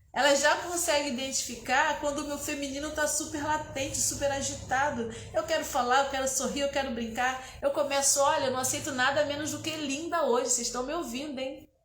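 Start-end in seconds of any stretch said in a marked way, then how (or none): none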